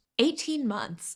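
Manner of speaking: voice cracking. Answering a letter writer about how long she waited: voice cracking. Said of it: "my voice just broke at saying eighteen months".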